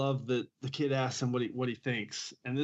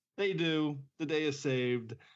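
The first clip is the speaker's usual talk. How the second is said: ordinary delivery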